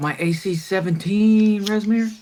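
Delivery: high-pitched battle shout. Game master voicing Chugs calling out to Resmir mid-combat, Chugs shouting. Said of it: "And Chugs will shout".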